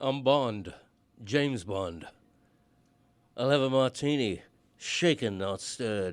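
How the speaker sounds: put-on English accent. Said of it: "You're just doing [name]".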